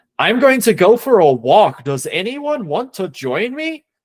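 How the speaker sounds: put-on, loud, high-pitched calling out like an announcer. Retelling how a quiet office guy stood up, making a loud announcement. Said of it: "and loudly goes".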